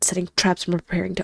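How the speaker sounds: plain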